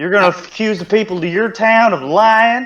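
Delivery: put-on Southern drawl. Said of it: "I'm faking a southern accent".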